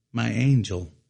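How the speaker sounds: ordinary talk, nothing marked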